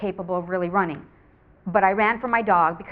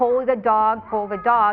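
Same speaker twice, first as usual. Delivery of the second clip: usual speaking voice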